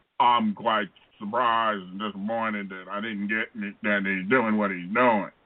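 very low, deep put-on voice, dropped way down. Imitating a public statement while criticizing a politician: Clyburn impersonation. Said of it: "that's a good Clyburn, uh, impersonation".

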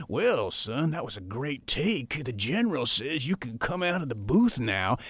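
put-on Southern accent, army general character voice. Recalling a studio habit, the speaker talks as the general; Southern general voice. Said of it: "you would talk in this general voice".

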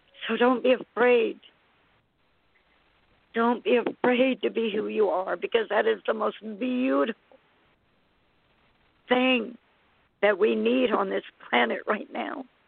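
in tears. Speaking to listeners about the transition to new energies: in tears. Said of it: "i am just in tears here".

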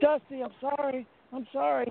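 high, tearful, grovelling plea through sobs. Retelling a man on his knees apologizing to another man, imitating someone crying. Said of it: "And he's like crying".

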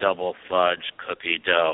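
very low, flat, lifeless robotic monotone drone. Retelling the custard employee's answer to your son, in a flat robotic voice. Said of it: "it sounded like a robot".

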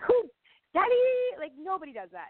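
fed-up, disbelieving, frustrated voice with high swooping pitch. Recalling being told to do it the way they wanted, retelling her frustration. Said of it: "I was like super frustrated".

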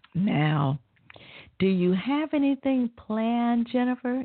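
mock sickly-sweet, syrupy, high sweet voice. Retelling a job offer, the speaker imitates the woman making it: mock-saccharine sweet voice. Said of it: "In her most saccharine voice".

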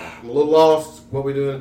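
ordinary talk, nothing marked

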